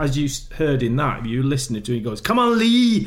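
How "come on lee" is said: put-on Scottish accent, high and loud. Recalling a man who always blamed him, the speaker does his Scottish accent. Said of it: "with his Scottish accent".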